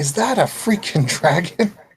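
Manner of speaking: very high-pitched, loud shout. Voicing Alistair calling out from the courtyard: Alistair shouting. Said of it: "you hear his voice come shouting from the courtyard".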